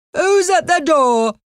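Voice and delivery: very high-pitched shouted call. A narrator reads an uncle calling out from his chair, shouting. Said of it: "Shouted Uncle Harry from his chair".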